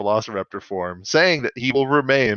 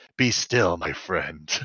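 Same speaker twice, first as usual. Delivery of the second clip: put-on warrior robot voice, lower and quieter; 5 semitones lower, 4 dB quieter than usual. Making up a scene: Dinobot comforts a dying foe, Dinobot voice. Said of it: "Dinobot, like, caresses his head, and he's like".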